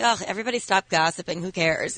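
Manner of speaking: ordinary delivery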